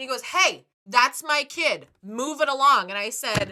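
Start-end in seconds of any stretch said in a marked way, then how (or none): 0.2-2.9 very loud, slow, deliberate shout. Retelling how a child's father yelled at the speaker, retelling a man yelling. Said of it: "Why is this guy yelling at me?".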